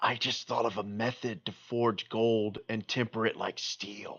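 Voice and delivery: soft, secretive half-whisper. Voicing a child character telling a secret to a stranger: half-whispering in character. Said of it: "She leans in and whispers".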